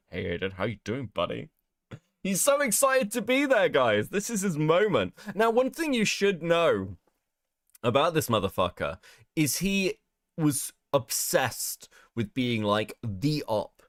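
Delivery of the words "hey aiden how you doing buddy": creepy, unsettling, overly chummy friendly tone. Mocking a caller whose voice sounds bad: imitating the caller's creepy voice.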